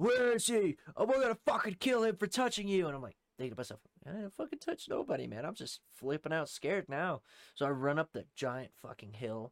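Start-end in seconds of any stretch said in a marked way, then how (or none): 0.0-2.9 very high-pitched, shrill, put-on screaming. Speaker retelling people hunting for him across the creek, retelling people screaming. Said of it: "everybody just starts screaming".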